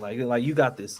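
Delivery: normal talking voice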